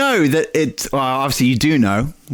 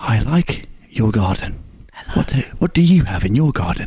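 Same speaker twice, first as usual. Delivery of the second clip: mock ASMR-style voice, pitched lower; 3 semitones lower than usual. A podcast host jokingly shows how to do the whole podcast, in ASMR-style voice.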